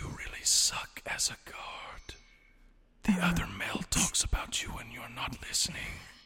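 quiet, hushed, breathy whisper. A bard of whispers speaks into a guard's mind: whispering. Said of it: "It hears me whispering in its mind".

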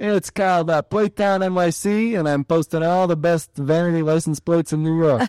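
high Brooklyn New York accent. Plugging her Instagram when asked where people can find her, Brooklyn accent. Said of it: "that's my Brooklyn accent there".

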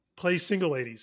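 ordinary talk, nothing marked

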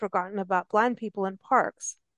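normal talking voice

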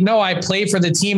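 ordinary talk

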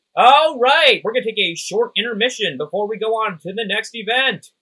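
very loud, high, shrill, booming stage announcer voice. Voicing the announcer who returns to the stage: announcer voice. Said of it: "the announcer comes back forward and goes".

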